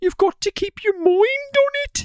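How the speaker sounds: put-on very high-pitched Birmingham accent. Quoting a school kid from a software video, copying a Birmingham kid's accent. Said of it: "we would just copy his accent".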